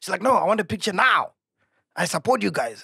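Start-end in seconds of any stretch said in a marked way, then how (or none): 0.2-1.3 mock aggressive tone, higher. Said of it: "very aggressive".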